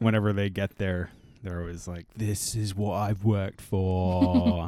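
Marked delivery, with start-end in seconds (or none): 2.2-4.7 put-on slow, stretched-out English rock-star accent. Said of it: "That's my impression of [name]".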